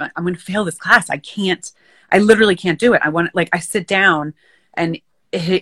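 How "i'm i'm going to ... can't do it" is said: put-on tearful, crying voice. Retelling telling her dad she would fail a class: imitating her own past crying. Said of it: "I would cry to my dad".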